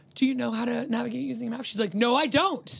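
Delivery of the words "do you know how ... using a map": tender, kindest gentle voice, no judgment at all. Retelling what he asked her, imitating the kindest voice. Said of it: "In the kindest voice I've ever heard".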